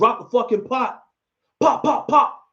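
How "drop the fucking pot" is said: put-on harsh voice, mildly half yelled. Recounting how a man with a gun screamed at a woman behind a pot: retelling a screamed command. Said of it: "while he's screaming".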